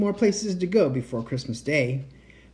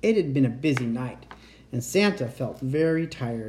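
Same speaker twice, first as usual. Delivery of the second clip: ordinary delivery, nothing marked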